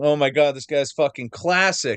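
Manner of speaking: normal talking voice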